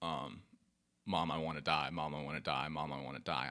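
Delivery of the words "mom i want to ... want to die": tearful pleading, lower pitch. Retelling begging a parent while crying: retelling own tearful begging. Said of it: "and I'm begging at this point".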